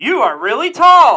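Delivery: put-on drunken, high, loud yell with laughter.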